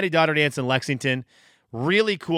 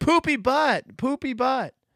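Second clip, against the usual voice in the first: mock little kid shrieking, piercing, very high pitch; 11 semitones higher than usual. A mother retells her daughter running out, imitating her daughter screaming. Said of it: "just screaming like".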